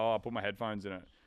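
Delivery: ordinary delivery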